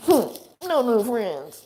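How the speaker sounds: put-on shrill, swooping, very high, loud toddler voice. Imitating a three-year-old child: little kid voice. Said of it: "That's how my son talks".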